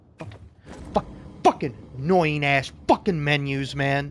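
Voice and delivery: low, irritated, pissy, fed-up grumbled swearing. A gamer complains about a game's menus while playing, irritated. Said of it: "I'm getting a little pissy".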